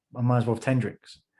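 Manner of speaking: ordinary delivery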